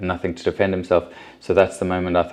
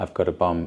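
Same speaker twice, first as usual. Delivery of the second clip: calm, mild, soft, gentle voice; 3 dB quieter than usual. Retelling what the attacker said to the police: imitating a gentle voice. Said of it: "in a gentle voice".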